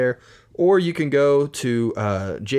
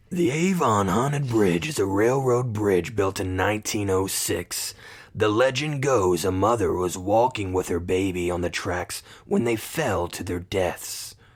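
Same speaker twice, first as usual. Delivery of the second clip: low, creepy, spooky scary voice; 4 semitones lower than usual. Speaker reads a haunted bridge legend to a listener who says do it; spooky scary voice. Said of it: "scary voice".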